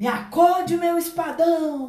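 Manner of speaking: frantic, desperate cry, very high and loud. The young man, his dog unable to help him, calls to his sword: desperate shout. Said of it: "Desesperado, o rapaz gritou".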